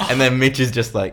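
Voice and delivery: ordinary talk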